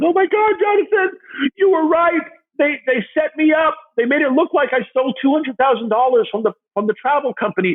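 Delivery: put-on tearful crying, very high pitch. Retelling a phone call from jail: imitating someone crying. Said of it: "she's crying".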